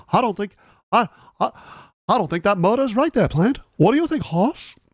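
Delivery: bad overdone New England accent. Voicing a skeptical sheriff who ignores a plant and a horse, in a bad new england accent. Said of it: "it did a bad New England accent".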